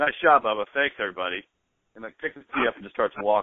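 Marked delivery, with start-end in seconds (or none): 0.0-1.4 mock dry sarcastic tone. Telling a pro-am golf story about a player's remark, retelling a sarcastic remark. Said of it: "he just sarcastically goes".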